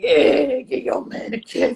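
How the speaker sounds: voice dropped way down deep, drawn out. Retelling what he said on getting in the car: imitating his deep voice. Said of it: "he has a really deep voice".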